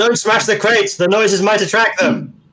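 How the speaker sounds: shrill, pitched-way-up in-character cry. Playing a character warning the party about noise: shouting in character. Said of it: "Joseph shouts".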